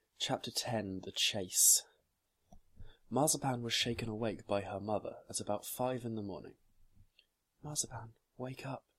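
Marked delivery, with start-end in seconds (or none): 7.6-8.8 soft voice, much quieter. A mother wakes her daughter Mazapan at five in the morning, speaking softly. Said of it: "she said softly".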